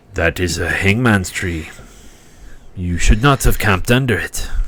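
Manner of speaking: put-on French accent, big creature's voice. A game master voices a character who comes up and looks at the campsite, french accent. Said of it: "and there's a 10-foot cloaked figure standing behind [name], ... and you see a large, furry furbog. / He comes up and looks at the scene. / All my people are French accents tonight. ... They're all Fr".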